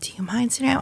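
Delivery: quiet, high half-whisper. Retelling what a woman half-whispered after introducing her friend: imitating her half-whisper. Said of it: "she kind of whispers to me".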